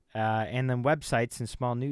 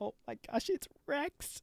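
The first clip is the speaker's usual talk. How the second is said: fake crying, breathy and whispered; 7 dB quieter than usual. Mocking a live reviewer reacting to Rex, imitating fake crying. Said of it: "fake crying".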